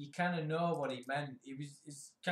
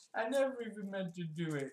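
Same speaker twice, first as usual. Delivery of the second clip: put-on high, tearful, childlike, defeated, pathetic crying voice; 5 semitones higher than usual. Quoting a cornered man's admission, imitating a crying voice. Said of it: "he did it in like a crying voice".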